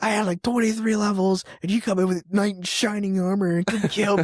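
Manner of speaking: furious, angry, griping, ranting complaint. Retelling a game story, imitating a friend's angry rant. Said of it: "cussing me out".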